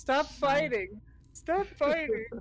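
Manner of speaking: high, sobbing, crying pleading through tears. In a tabletop role-play, a party member begs the others to stop fighting, crying. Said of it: "Stop crying!".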